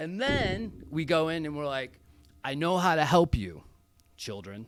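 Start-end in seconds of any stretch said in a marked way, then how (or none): 2.4-4.7 earnest, put-on rescuer-style tone.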